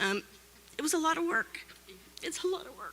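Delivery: crying through the words. Thanking donors and supporters after being chosen, crying. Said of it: "I'm sorry for crying".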